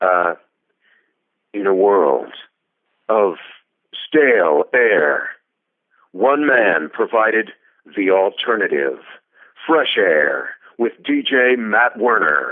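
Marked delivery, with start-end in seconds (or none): 1.5-12.5 movie trailer announcer voice. Doing a movie trailer style station ID: Don LaFontaine voice. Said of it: "You want the Don LaFontaine again?".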